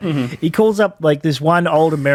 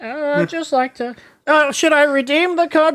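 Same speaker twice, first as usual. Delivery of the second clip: put-on very high-pitched old lady voice; 11 semitones higher than usual. Retelling a YouTuber's scam-caller prank, doing Kip Boga's old lady voice. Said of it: "the guy who calls them up as an old lady".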